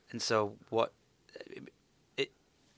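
stuttering, repeating words. Asking a follow-up question, apologizing for stuttering: stuttering. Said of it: "sorry if I'm kind of stuttering here".

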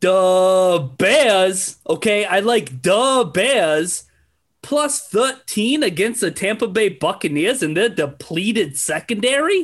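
put-on Midwestern accent. Speaker gives Chris his football pick for this week in a Midwest accent impression. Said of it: "let me do my best Midwest impression".

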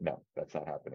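put-on firmness. Retelling a man's response to a joke about signing in Real Madrid, imitating a firm refusal. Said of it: "was like very firm on this".

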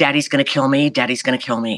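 mock frightened, scared-sounding voice. Retelling her own thought after speaking up: imitating being scared. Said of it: "I immediately got scared".

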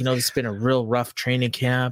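ordinary talk, nothing marked

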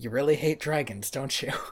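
quiet mock deadpan. Recounting a card-game scene where Yugi beats Kaiba's monster, the speaker quotes Yugi mock-deadpan. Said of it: "it's delivered just deadpan".

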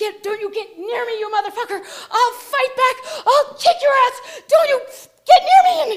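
put-on screaming and crying. Retelling going into hysterics at a laughing man, mock screaming and crying. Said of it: "I start screaming and crying".

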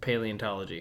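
flat, expressionless, low, quiet deadpan delivery. Asked by another speaker what the doctorate is in; deadpan. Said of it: "You just deadpan that".

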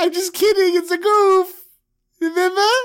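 goofy, reassuring, very high, loud voice.

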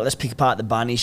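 ordinary talk

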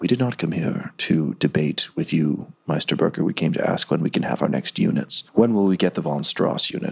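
soothing tone suddenly turning icy cold. A formerly soothing character answers Meisterburger's complaint: icily cold voice. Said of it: "the soothing voice suddenly go very icily cold".

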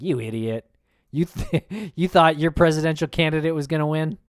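mocking, jeering taunt through laughter. Imagining a father-in-law taunting the loser: imitating someone laughing mockingly. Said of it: "cracking up, like, laughing".

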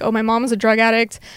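ordinary talk

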